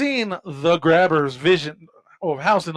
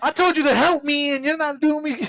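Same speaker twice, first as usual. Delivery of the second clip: put-on fed-up, exasperated voice, higher; 10 semitones higher than usual. Retelling a film scene where Gwen prays: imitating fed-up Gwen. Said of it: "she's fed up, and she finally goes".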